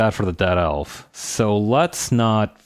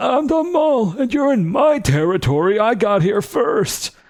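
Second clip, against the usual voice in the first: put-on ancient old man voice, pitched very high; 12 semitones higher than usual. Narrating a scene, the speaker voices the mole character in an old guy voice. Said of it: "I'm gonna give him the old guy voice".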